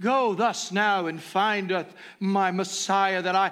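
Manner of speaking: loud, put-on, archaic churchly proclaiming voice. Speaker acts out a man who wanted to kill Jesus, mock-ecclesiastical voice. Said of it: "ecclesiastical sounds to his voice".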